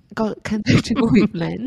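put-on Irish or Scottish accent. Retelling an overheard kombucha order, the speaker is imitating an Irish or Scottish accent. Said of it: "That's like Irish or Scottish".

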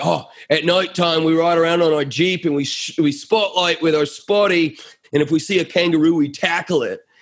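imitated Australian accent. Retelling what a rugby-playing guy answered him, imitating an australian accent. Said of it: "you got to forgive my accent there".

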